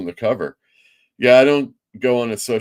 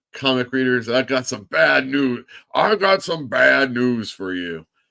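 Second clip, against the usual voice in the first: grand, preachy, preacher-like proclamation; 4 semitones higher than usual. Reading a viewer comment, then announcing bad news: Bad News Barrett impression. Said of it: "channeling his bad news Barrett".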